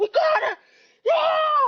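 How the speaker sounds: shrill, very high outburst, "yeah" stretched. Retelling a halftime moment when a teammate loses it: imitating a teammate losing it. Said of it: "throwing a jersey, and she's like".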